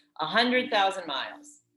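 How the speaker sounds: ordinary talk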